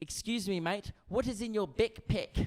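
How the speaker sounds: put-on New Zealand accent. Retelling what a guy asked about your backpack, new zealand accent. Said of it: "Excuse the accent".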